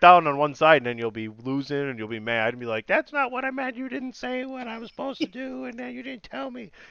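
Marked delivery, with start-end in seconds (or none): 2.9-6.7 put-on very high, squeaky cartoon old-lady voice. Mimicking the listener's future complaint, in a voice like Tweety Bird's grandmother. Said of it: "Why do I sound like Tweety Bird's grandmother".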